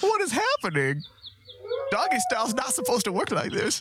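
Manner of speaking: very high character voice with swooping, swinging pitch. Reacting with alarm to something strange: Don Knotts voice. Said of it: "Why is it Don Knotts?".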